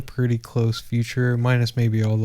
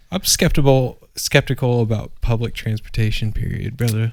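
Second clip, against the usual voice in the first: ordinary talk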